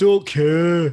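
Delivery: put-on thick Mancunian accent, booming, very loud shout. Showing another speaker how a wrestler sounds: imitating Davey Boy Smith's Mancunian accent. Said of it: "shouting in his stupid Mancunian accent".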